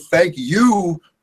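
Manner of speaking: excited, happy, blurted out at high pitch. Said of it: "I'm excited to be here".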